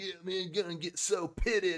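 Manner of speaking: surfer bro voice. Describing how they sound explaining things, doing a surfer bro meme voice. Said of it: "sound like that surfer bro Brobra guy".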